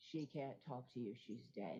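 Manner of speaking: darkest, very deep, low voice. Retelling what a voice on the call said: imitating a darkest deep voice. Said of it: "the most darkest, deep voice say".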